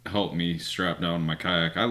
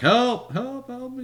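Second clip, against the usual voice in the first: play-acted, very high, drawn-out, stretched-out screaming. Retelling calling alone to distant paddleboarders: imitating a scream for help. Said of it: "And I'm screaming".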